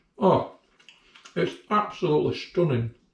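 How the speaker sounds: speaking while chewing, mouth full. Tasting a forkful of a dish, the speaker praises it, talking with mouth full. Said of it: "talking with my mouth full".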